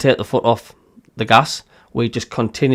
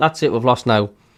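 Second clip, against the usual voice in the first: ordinary delivery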